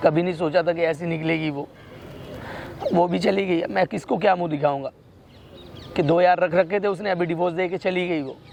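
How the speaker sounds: low, tearful crying, sobbing through words. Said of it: "तू रोएगा, मेरे को रोना आ जाएगा".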